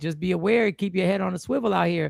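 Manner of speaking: ordinary talk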